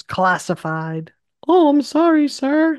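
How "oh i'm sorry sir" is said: loud, very high, apologetic voice jump. Retelling a scene, the lieutenant backing down: retold line, voice goes higher. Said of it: "his voice gets higher".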